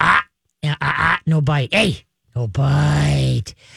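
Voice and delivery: deep, low, rough, stern growl, stretched out. Demonstrating how to correct a dog about to bite, growling at a dog. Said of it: "give him a growl".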